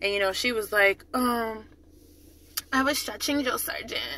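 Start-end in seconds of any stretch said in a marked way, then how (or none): 1.1-4.0 strange, odd, breathy whisper. Retelling what a woman in the line answered when asked what she was doing, mimicking her strange voice. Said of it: "why do you sound like that?".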